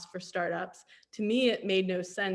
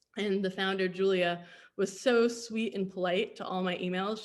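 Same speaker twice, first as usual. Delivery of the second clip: normal talking voice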